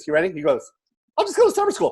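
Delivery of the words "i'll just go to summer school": quick, fast, very high squeaky, rattled-off delivery. Retelling again how fast the son answered: imitating son's fast deadpan reply. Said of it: "That fucking fast".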